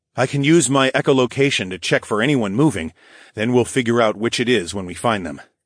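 plain

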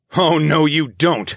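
snarled, growling voice. The narrator, blocking a charging lava goblin's path, speaks the line: snarling. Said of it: "I snarled".

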